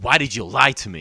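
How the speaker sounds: put-on angry woman voice. Retelling a woman confronting him after finding out he lied, imitating an angry woman. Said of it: "she turns around really angry".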